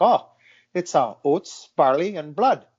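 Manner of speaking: slow, put-on Irish accent in a woman's voice. Retelling what a woman said to the speaker's wife, in an Irish accent. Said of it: "I'm gonna try an Irish accent".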